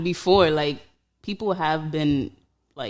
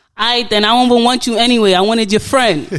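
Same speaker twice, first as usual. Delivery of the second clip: very loud, bitter, pitched-up, sore-loser tone; 7 semitones higher, 10 dB louder than usual.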